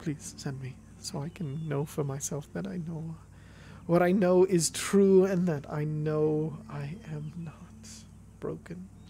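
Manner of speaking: slow, tearful, weeping, broken-down pleading tone. Voicing a character who just cried, eyes bloodshot: crying character. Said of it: "small sobs as he's just crying to himself".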